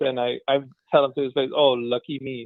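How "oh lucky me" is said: extremely sarcastic, dry delivery. Retelling what was said to a car salesperson: imitating own sarcastic reply. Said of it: "I'm extremely sarcastic".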